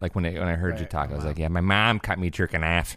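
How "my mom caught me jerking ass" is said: put-on Chicago accent, spoken slower. Echoing how another player sounded when they talked: Chicago accent. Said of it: "Chicago accent".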